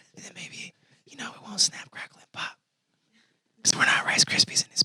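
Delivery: hushed, breathy whisper. Speaker telling the audience he will whisper to them: whispering. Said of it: "I'm going to whisper to y'all".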